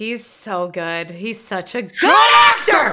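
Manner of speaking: very slow, drawn-out, loud, swooping, thrilled excited screaming. Gushing to viewers over an actor's performance: excited screaming. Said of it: "I'm sorry for the screaming".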